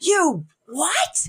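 screeching, very high-pitched scream. Telling a story, acting out a man shooting up at the news: retelling a scream. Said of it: "he screams".

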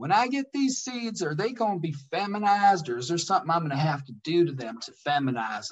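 put-on Southern woman's accent. Retelling a customer's question about seeds: imitating a southern accent. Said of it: "I can picture her saying it with her accent".

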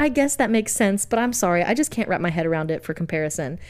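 ordinary talk

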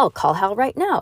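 plain

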